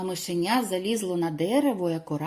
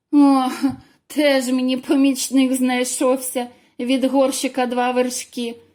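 loud, high, mocking laughter through the words; 5 semitones higher, 7 dB louder than usual. The little hare answers the mouse who wants to help the hedgehog: laughing. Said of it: "засміялося зайчиня".

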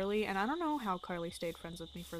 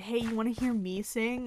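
ordinary talk

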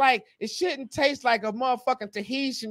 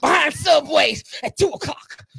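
raised, slowed, growling mock wrestler promo voice. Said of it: "you sound like when Macho Man Randy Savage got mad".

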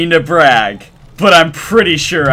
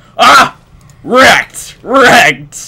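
loud, high yell with voice breaking mid-word; 8 semitones higher, 5 dB louder than usual. Player reacting during a game with friends, voice cracking. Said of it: "That voice cracked though".

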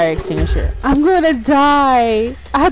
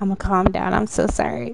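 ordinary talk

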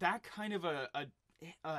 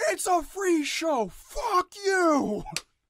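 piercing, shrill yell, very high and very loud; 13 semitones higher, 12 dB louder than usual. Co-host mocks his partner's outburst at viewers, mock yelling. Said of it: "don't yell at them".

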